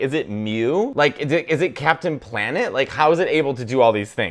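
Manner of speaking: normal talking voice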